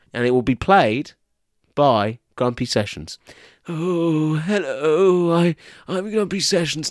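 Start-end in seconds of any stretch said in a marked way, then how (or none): 3.7-6.8 very slow, drawn-out, posh character voice. Introducing yourself as a character called Grumpy Sessions, in a character voice like Prince Charles. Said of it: "That sounds more like Prince Charles".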